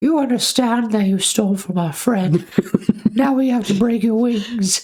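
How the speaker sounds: very high, squeaky, elf-like creature voice. Retelling a cartoon story, speaking as the bear to the owl; Dobby-like voice. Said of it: "You sound like Dobby from Harry Potter".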